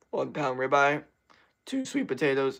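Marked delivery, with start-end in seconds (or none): 1.6-2.6 breaking, cracking voice mid-line. Talking to listeners, with the voice cracking. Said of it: "you hear that voice crack".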